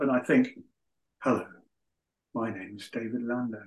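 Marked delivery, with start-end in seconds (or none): 1.2-3.6 gentle, soft, hushed, lulling sleep narrator voice. Imitating the voice of an on-board relaxation channel: David Lando voice. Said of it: "That's a very good impression".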